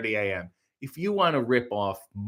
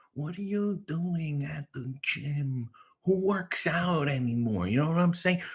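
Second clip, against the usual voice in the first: berating, laying-into stand-up comic rant; 3 semitones higher, 5 dB quieter than usual. Doing an impression that berates a viewer's husband for being at the gym: Sebastian Maniscalco impression. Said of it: "this is my Sebastian Maniscalco impression".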